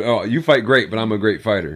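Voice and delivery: ordinary talk, nothing marked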